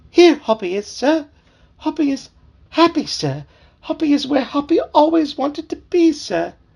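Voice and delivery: tiny, very high, piping frog voice. Hoppy answering from the water when someone calls for him, in a tiny voice. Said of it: "A tiny voice answered".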